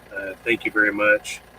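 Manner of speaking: ordinary delivery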